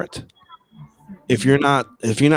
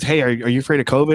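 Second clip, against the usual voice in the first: ordinary talk, nothing marked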